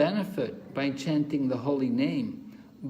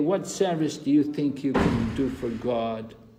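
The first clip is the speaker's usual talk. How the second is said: mocking, dismissive, sarcastic taunting tone. Retelling what critics say to the group: imitating a sarcastic remark. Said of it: "sarcastically remark to us".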